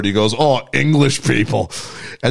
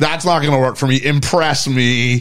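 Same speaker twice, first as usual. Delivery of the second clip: plain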